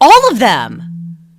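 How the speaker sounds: very loud, frustrated delivery with an edge. Recounting being interrupted and pressed, the speaker replays a reply with a frustrated edge. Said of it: "with an edge in my voice".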